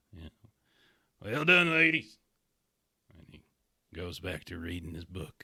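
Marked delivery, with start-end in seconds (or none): 1.2-2.2 loud, high-pitched yelling, calling out. Narrator voices a man calling out to ladies over piano: shouting. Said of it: "you're screaming, yelling over his piano".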